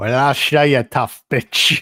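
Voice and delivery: put-on over-the-top Irish accent. Repeating a woman's line from something the speaker watched, in an exaggerated Irish accent. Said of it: "she says this in such a great like Irish accent".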